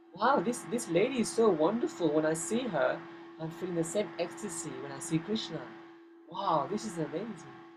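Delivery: ordinary talk, nothing marked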